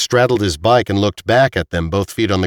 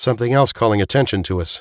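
ordinary delivery

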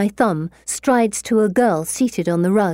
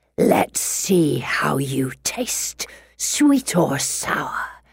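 hissed through gravel; 6 semitones lower, 3 dB quieter than usual. Narrator voicing a growing horned beast looming over the narrator and Felicity, deep gravelly hiss. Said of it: "He hisses in a deep, gravelly voice".

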